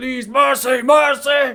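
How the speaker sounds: very high, loud, shrill pleading yell. Voicing a wounded gray dwarf who yells out: yelling, begging for mercy. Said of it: "he begins to yell out in common".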